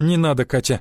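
ordinary delivery

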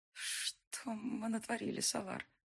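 slow whisper with the voice gone hoarse. Narrator as a woman who slid to the floor, speaking to Salar, hoarse whisper. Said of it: "прошептала я севшим голосом".

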